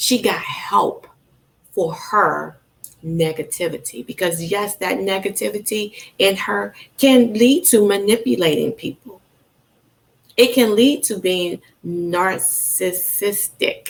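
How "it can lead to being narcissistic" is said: very slow, deliberate, word by word delivery. Speaker describing a woman who got help for her negativity, said really slowly. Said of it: "I have to say that really slowly".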